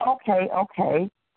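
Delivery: ordinary talk, nothing marked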